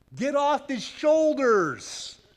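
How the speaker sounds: loud, high-pitched, drawn-out yell. Retelling how a security guard at a concert yelled at him: imitating a security guard yelling. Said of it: "he's yelling".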